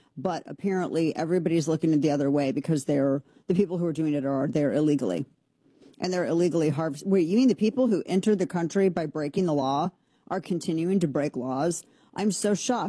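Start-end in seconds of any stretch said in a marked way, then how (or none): 12.2-12.9 heavily sarcastic, put-on shocked, astonished voice. Reacting sarcastically to a news story: sarcastic fake-shocked voice. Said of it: "This is my shocked voice".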